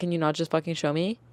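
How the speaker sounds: put-on rude voice with attitude. Retelling a customer interrupting an explanation: imitating a customer with attitude. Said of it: "if you hit me with the".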